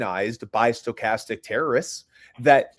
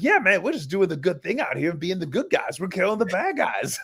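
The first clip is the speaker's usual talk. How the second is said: put-on puppet-like voice, pitched higher; 6 semitones higher than usual. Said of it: "They sound like fucking Muppets".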